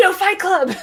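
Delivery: sudden, high, shrill screamed outburst. Retelling a locker-room fight scene from the show, imitating Beard screaming. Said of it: "and just screams".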